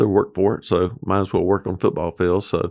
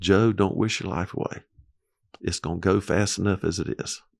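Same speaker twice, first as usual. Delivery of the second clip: mock, very calm, soft, even voice; 5 dB quieter than usual. Recalling wishing his days over, retelling God's words in a very calm voice. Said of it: "in a very calm voice".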